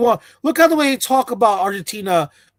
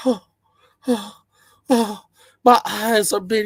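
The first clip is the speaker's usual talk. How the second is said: put-on sobbing, tearful, blubbering drunk lament; 3 dB quieter than usual. Retelling what a drunk man said, imitating him crying. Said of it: "He's crying like".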